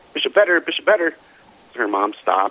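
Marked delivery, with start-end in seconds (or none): 0.1-1.1 mock little girl's voice, high and yelling. Retelling how a little girl called from a car window: imitating a little girl screaming. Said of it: "she's screaming out the window".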